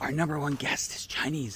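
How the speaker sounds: whispered voice. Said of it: "Why are you whispering?".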